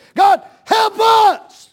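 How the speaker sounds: slow, high, fervent shouting, turning hoarse. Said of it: "You ought to lose your voice praying".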